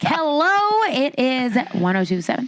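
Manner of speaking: high, swooping on-air radio DJ voice. Teasing the host about how he greeted her before recording: imitating a radio announcer voice. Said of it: "that was my radio voice".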